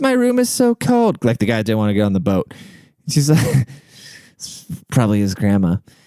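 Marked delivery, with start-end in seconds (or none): 0.0-1.2 put-on British accent, very high and slow. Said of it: "And she had a British accent".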